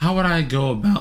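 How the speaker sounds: voice breaking and cracking on the words. Working something out, muttering a question to oneself, voice cracking. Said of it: "voice crack".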